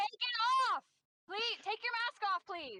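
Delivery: high-pitched yelling. Having already yelled at restaurant staff, the speaker yells at a masked stranger. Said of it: "I'm gonna yell at this dude too".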